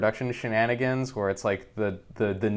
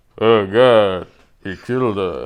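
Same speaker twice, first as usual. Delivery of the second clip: very loud, flat, totally stoic deadpan; 8 dB louder than usual. Retelling a movie scene where a hostage is killed: imitating Sylvester Stallone's stoic deadpan. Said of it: "the most stoic deadpan".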